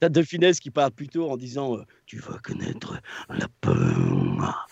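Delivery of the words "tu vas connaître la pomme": orc voice, very low, slow, drawn out, rough. Voice actor recalls the second take that made people laugh: Warcraft orc voice. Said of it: "avec une voix d'orque de Warcraft".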